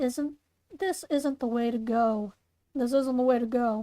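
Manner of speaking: ordinary talk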